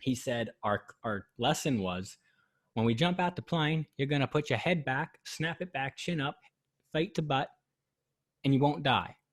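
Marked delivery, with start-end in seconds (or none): 2.7-9.1 put-on best-effort Australian accent, pitched a bit high. Recalling the skydiving instructor's joke before the jump; imitating an Australian accent. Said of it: "I'll try to do my best impression".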